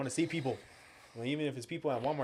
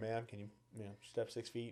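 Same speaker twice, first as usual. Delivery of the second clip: polite, careful, courteous, mannerly tone; 2 semitones lower, 11 dB quieter than usual. Retelling asking a stranger to keep her distance: retelling a polite request. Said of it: "at first, like, I'm all polite".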